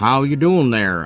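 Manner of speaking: put-on cowboy voice. Greeting another person in a costume game, playing a cowboy. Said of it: "I'm a cowboy now".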